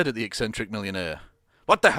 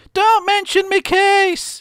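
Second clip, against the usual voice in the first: very high, loud, furious shouting roar; 8 dB louder than usual. Narrator reading a story, voicing the furious Flynn: Flynn roaring. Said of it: "He roared".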